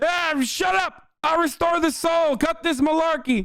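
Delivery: shrill, high, slow, drawn-out angry yelling. Imitating a politician yelling at activists on phone calls: imitating Joe Biden yelling. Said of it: "literally fucking yelling at, like, activists".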